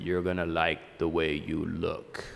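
deep announcer voice. Preaching, recalling an old commercial's closing line, in a deep Men's Wearhouse ad voice. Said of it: "that guy with the deep voice".

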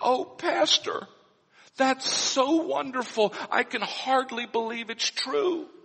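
mock-tearful, happy voice, acted. Pastor acting out a listener's reply to his good news, imitating a tearful happy reply. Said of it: "even as the tears run down your cheeks".

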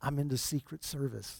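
barely audible, very soft, hushed whisper. Joke teller voices a man answering a preacher, retelling a whisper. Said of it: "he whispered back to the preacher".

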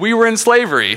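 very high cartoon character voice, jumping up in pitch. Quoting a VeggieTales pea who interrupts about Egypt: VeggieTales pea impression. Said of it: "You didn't know I had the impressions".

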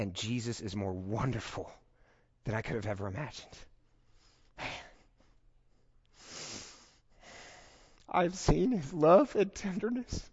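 voice welling up, overcome with emotion. Sharing a personal reflection after years of experience, getting emotional. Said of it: "I knew I was gonna get emotional".

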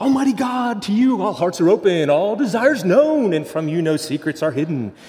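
high, cheerful, joyful radio DJ voice. Imitating the priest praying the Collect: imitating a joyful disc jockey voice. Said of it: "with that disc jockey voice".

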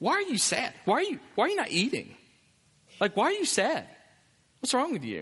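sing-song probing tone. Retelling how a man questions Hannah, acting out his tone with her. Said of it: "It's that kind of tone".

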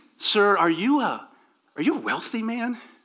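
put-on awed, breathless voice. Retelling the appraiser turning to the older man; imitating breathless amazement. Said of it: "almost losing his breath, he sort of says".

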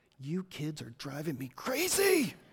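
close, hushed, secretive half-whisper. Retelling how the wife calms a child: imitating a half-whisper. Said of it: "she'll whisper in their ear".

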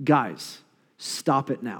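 very slow put-on dad voice. Imagining writing the letter himself, telling them to stop, best dad voice. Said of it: "in my best dad voice possible".

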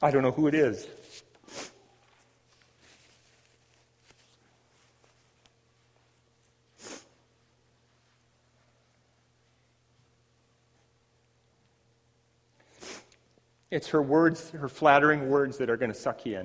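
speaking through tears, tearful voice. Speaking to whoever needs to hear this, crying while speaking. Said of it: "I think I'm crying here".

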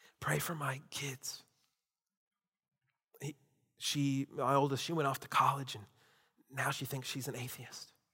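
very quiet, hushed, confiding whisper. Retelling a woman's request to a pastor after the service: imitating a woman whispering. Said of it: "and then began to whisper".

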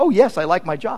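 plain

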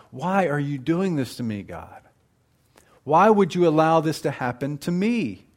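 mock-accusatory tone. Acting out how people question God, mock-accusatory tone. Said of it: "with an accusatory tone".

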